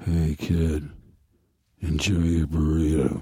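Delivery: very low leading-man voice, movie-hero style. Asked for a line, saying it as an impression: Harrison Ford impression. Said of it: "Could you have Harrison say".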